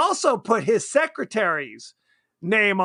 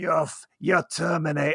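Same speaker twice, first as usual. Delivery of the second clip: wild, crazy-sounding put-on Maine accent; 4 semitones lower than usual. Retelling what a guy down there said to someone, crazy guy's Maine accent. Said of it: "I'm doing the crazy guy's accent".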